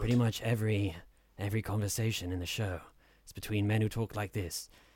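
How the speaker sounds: put-on soft-spoken British accent. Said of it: "British actors with these sort of smooth voices who just are very softly spoken".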